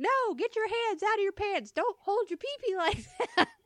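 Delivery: put-on very high, shrill, loud scolding. Retelling a mom in the store scolding her little boy, imitating a loud scolding. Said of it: "so loud".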